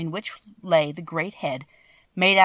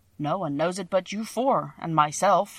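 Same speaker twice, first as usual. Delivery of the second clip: usual speaking voice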